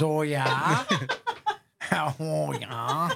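put-on very slow, drawn-out, swooping Wisconsin accent. Quoting how a woman answers, do a put-on Wisconsin accent. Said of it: "with her Wisconsin accent, she says".

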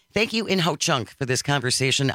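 plain

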